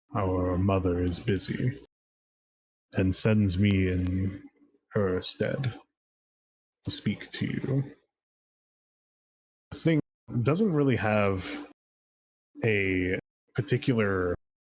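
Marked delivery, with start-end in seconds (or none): 0.2-7.9 distorted, radio-like voice. Game narrator voices a thing sent by its mother, almost distorted voice. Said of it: "Its voice is almost distorted when it speaks".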